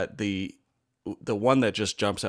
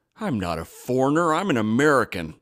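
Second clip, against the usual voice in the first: mock disgusted and scornful, loud; 4 semitones higher, 5 dB louder than usual. Retelling a tourist's reply to a border officer: imitating a disgusted tourist. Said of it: "with the most disgusted look and goes".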